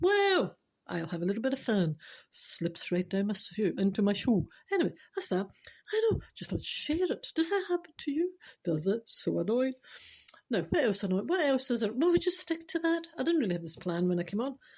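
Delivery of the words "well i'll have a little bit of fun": talking ankle sock character voice. Telling about new trainers, speaking as the ankle sock: voicing a talking ankle sock. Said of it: "the sock goes".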